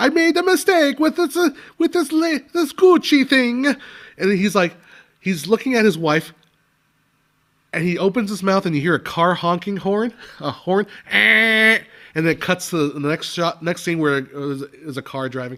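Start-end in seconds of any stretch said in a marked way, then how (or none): 0.0-3.7 terrible put-on Italian accent, higher and louder. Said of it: "he has this terrible, uh, Italian accent".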